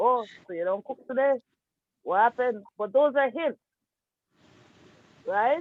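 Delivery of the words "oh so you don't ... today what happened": ordinary delivery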